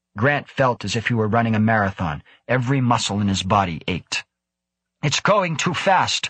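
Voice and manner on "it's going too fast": raised, high, urgent shout. O'hara calls out during a chase at full power, shouting. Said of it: "O'Hara shouted".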